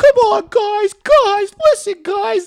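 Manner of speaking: very high, shrill, loud mocking voice. Retelling how the class mocked a trades teacher, mimicking a high-pitched voice. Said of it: "Everyone going".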